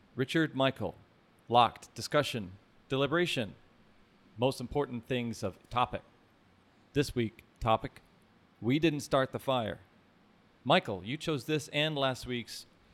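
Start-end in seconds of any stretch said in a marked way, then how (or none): 0.2-9.8 put-on staccato, choppy, clipped, halting delivery. Opening the podcast and introducing the co-hosts: put-on staccato choppy delivery. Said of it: "I love your staccato reading".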